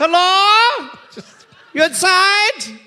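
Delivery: put-on German accent. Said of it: "A cherry with a German accent".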